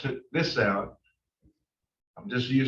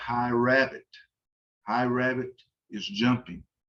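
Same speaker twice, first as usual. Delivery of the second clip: normal talking voice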